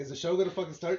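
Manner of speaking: ordinary talk, nothing marked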